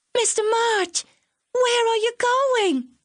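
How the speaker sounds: very high-pitched, shrill scream. A girl calls after her teacher as he walks away; screamed. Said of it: "she screamed after her teacher's retreating figure".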